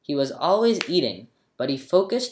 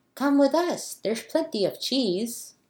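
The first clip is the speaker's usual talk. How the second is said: very high, small, tiny fairy voice; 10 semitones higher than usual. Narrator reads a tiny fairy's invitation, high fairy voice. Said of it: "It said in a high voice".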